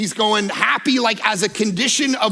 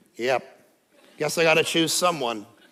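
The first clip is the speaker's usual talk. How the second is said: deep, low, toneless droning monotone; 7 semitones lower, 5 dB quieter than usual. Acting out answering a marriage proposal without joy, flat monotone. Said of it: "you weren't answering yes in monotone".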